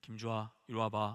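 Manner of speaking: very low, deep, grave, stern voice. A father showing the voice he uses when his child misbehaves, stern, grave voice. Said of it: "제가 목소리를 다르게 냅니다 … 이렇게 해요, 제가 … 근엄한 목소리".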